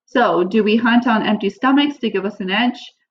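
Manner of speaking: ordinary talk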